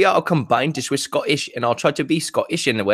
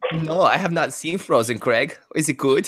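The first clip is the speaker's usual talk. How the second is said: put-on camp German accent. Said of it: "this is my favorite voice to do".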